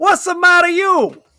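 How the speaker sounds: high, over-the-top, exaggerated fake Italian accent. Retelling what a man said on walking in, exaggerated italian caricature accent. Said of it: "a borderline offensive Italian caricature".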